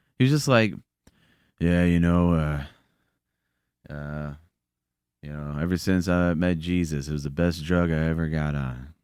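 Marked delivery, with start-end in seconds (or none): 1.6-8.8 slow, unconvincing, half-hearted, by-the-numbers delivery. Retelling what the men's group leader said: imitating an unconvincing tone. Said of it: "your tone of voice isn't even convincing".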